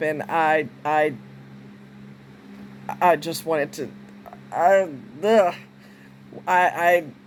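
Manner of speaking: stammering false starts, halting, low and very slow. Speaker, telling of a man struck by a car, loses his words: stuttering. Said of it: "I'm stuttering".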